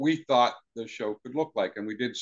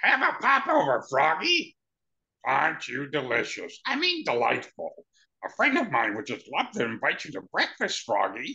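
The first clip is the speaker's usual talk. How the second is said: swooping, sing-song cartoon witch character voice. The speaker demonstrates a voice they did for a role: Sydney the Witch voice. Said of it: "that was Sydney the Witch's voice".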